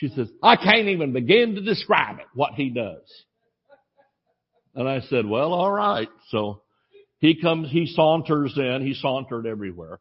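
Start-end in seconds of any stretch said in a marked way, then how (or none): 0.4-3.0 put-on Southern accent from Cleveland, Tennessee. Retelling what a woman told the speaker: Cleveland, Tennessee accent. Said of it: "in Cleveland, Tennessee accent".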